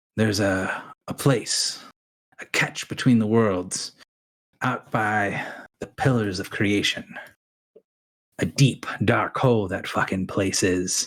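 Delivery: hushed voice, just audible. A character looks at the group and tells them of a place, hushed voice. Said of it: "in a loud enough voice that people can hear him, but quiet enough that people kind of have to lean in".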